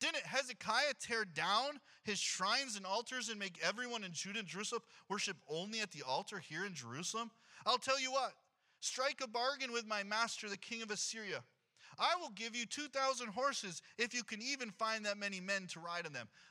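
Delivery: plain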